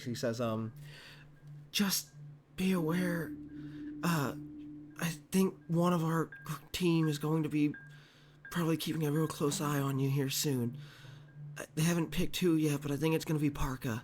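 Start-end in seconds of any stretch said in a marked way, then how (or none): 1.7-14.0 hushed whisper. In a game, a character leans in close to give a warning; whispering. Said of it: "leans in so he can whisper".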